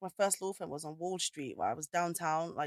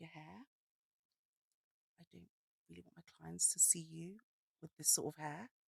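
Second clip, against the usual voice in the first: hushed, very quiet, lowered voice; 11 dB quieter than usual. Retelling a woman's compliments, then her remark, retelling a voice dropping low. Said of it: "her voice like drops like ten volumes down".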